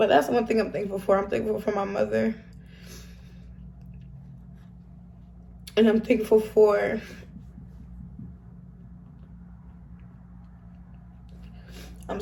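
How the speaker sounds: holding back tears. Addressing someone watching the video, holding back tears. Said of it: "I'm really trying not to cry".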